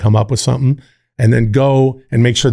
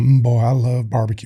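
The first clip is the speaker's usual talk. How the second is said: totally straight, plain, unexaggerated delivery; 4 dB quieter than usual. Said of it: "it's just him just going".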